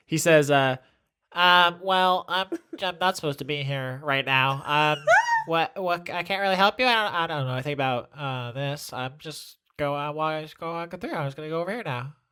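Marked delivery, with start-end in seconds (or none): 1.3-12.1 put-on nerd voice, rushed and fumbling. Acting out what another person says after getting burnt, in a nerd voice. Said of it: "Now I gotta do nerd voice".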